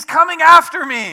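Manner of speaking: very shrill, very loud, drawn-out put-on yell. Retelling what the girl yelled out during a pretend game, retelling a girl's yell. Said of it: "she yells out".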